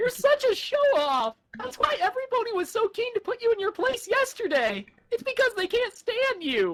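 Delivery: whiny, swooping sing-song voice swinging up and down. Reading a scene aloud, calling someone a show-off: whiny Spike voice. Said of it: "Whiny Spike is the perfect Spike".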